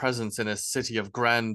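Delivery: ordinary delivery, nothing marked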